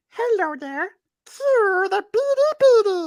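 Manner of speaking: very high, slow, squeaky, eerie put-on voice. Improvising a voice for the buddy on the spot: improvised voice for a buddy. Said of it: "now he needs a voice".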